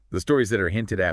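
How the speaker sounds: plain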